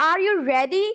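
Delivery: pitch climbs on the word ready. Example question with a rising last word: rising tone on ready. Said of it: "बट ready पे मैंने अपना टोन rise कर दिया है".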